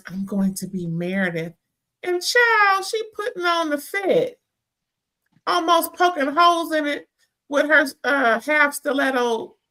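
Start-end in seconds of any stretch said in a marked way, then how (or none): 0.1-1.5 whisper, quieter. Retelling what Angie said while trying on an outfit: imitating a whisper. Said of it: "then Angie whispers".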